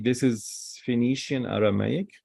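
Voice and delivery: ordinary talk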